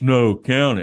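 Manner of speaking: mock rough, gruff, loud, barked, abusive. Retelling a man's reply when handed the money, in a mock-gruff abusive tone. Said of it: "a really gruff, kind of abusive tone".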